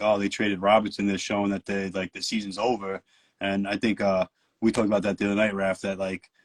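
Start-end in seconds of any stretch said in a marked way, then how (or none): none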